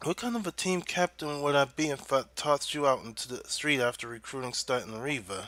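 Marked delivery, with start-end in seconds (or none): none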